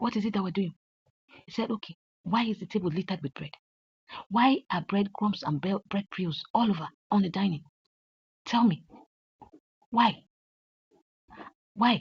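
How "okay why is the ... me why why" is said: put-on slow, angry, scolding father voice. Retelling a family argument, quoting the father, retelling a father shouting. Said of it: "Dad, why are you shouting?".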